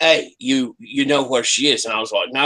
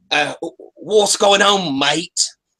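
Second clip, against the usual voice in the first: put-on, badly done, high London punk accent; 6 semitones higher than usual. Player voicing a character pretending to be a London punk: bad London punk accent. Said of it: "has a bad English accent because he's pretending to be a London punk".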